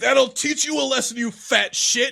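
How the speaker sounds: threatening growling tone. Narrating a game to players, the game master voices Ben Stiller, growling. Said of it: "he growls".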